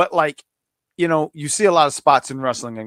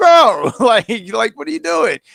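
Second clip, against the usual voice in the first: acted, high, raised yelling; 6 semitones higher, 5 dB louder than usual. Retelling watching a wrestling match on TV: imitating own past yelling. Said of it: "but I'm yelling at the T V".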